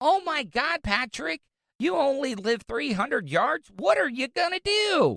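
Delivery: cheery, bubbly, high sing-song reporter tone. Listening back to her national news interview, imitating her: mock-happy bubbly voice. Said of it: "why does she sound so happy?".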